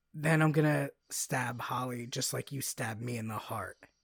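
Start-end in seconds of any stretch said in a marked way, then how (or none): none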